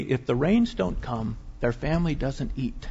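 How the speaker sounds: confiding, hushed stage whisper. Retelling what a guide half-whispered during a church service: imitating a half-whisper. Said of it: "he whispered to me".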